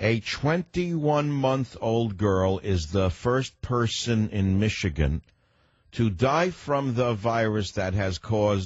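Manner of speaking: unhurried, slow, deliberate bureaucratic reading pace. Pretending to work for a federal agency while reading a news story, slow government-worker pace. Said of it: "I'll read the story at their pace".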